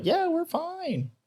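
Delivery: very high, slow, mock drunk drawl.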